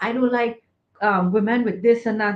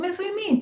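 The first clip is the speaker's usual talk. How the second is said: put-on, very high, panicked, freaked-out voice; 9 semitones higher, 4 dB quieter than usual. Retelling a student's reaction to a counselor's question: imitating a freaking-out student. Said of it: "And he's freaking out".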